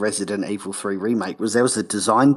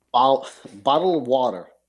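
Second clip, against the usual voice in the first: put-on rural hillbilly American accent; 3 semitones higher than usual. Asked to say the phrase the american way, saying it: american accent. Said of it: "say it American".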